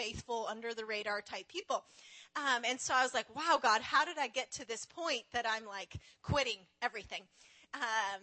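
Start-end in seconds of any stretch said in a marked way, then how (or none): none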